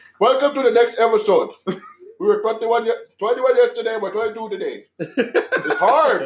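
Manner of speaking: put-on Indian accent. Opening the next episode while slipping into an indian accent. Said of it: "You're slowly going Indian".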